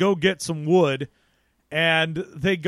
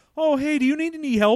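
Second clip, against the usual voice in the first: mock, ridiculously overfriendly tone, higher-pitched; 9 semitones higher than usual. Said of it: "ridiculously friendly".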